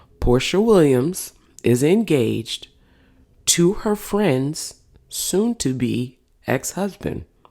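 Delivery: very slow, dragged-out, deliberate, word by word. Repeating a statement a little slower for listeners: slow and deliberate. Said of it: "let me say that a little bit slower".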